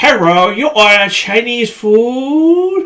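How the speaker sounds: very slow cartoon voice, food drawn out. Redoing the same line the way South Park would: South Park style voice. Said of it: "I gotta do that like South Park".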